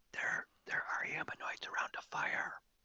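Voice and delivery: very slow, breathy, hushed whisper. Sending a whispered message in character about humanoids: whispering. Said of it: "No, it's great".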